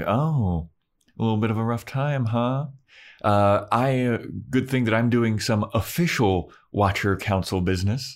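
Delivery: a little snide, snarky, sarcastic tone. Retelling how Wesley gets snarky with Giles: imitating Wesley being snarky. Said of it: "gets a little snarky with Giles".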